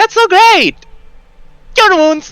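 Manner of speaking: very high, loud put-on fantasy creature voice. Playing a blue tiefling who cheers on a wounded ally: blue tiefling voice. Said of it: "I'll just do the blue tiefling voice".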